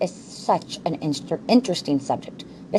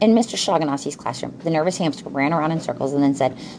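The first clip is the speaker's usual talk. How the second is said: ordinary delivery, nothing marked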